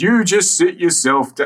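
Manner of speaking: high, botched put-on upper-class accent. Voicing the seamstress trying for an upper-class accent: Rolf's failed upper-class accent. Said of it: "his attempts at an upper-class accent are closer to".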